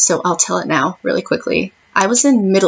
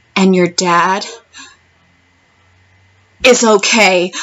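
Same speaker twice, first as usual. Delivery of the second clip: very slow, painfully stretched, deliberate words. Retelling how a school aide delivered news: imitating someone speaking really slowly. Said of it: "really slowly".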